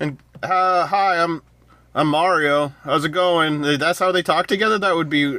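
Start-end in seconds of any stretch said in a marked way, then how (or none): 0.4-3.6 put-on casual, relaxed voice. Imitating how the actor might voice Mario: Chris Pratt voice as Mario. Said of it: "Chris Pratt's voice".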